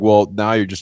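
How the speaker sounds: ordinary talk, nothing marked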